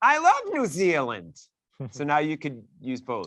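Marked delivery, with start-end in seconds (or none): 0.0-1.4 very high, loud put-on voice. Chatting about Jacinda and New Zealand: Linda voice. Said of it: "Can I say it with in the Linda voice?".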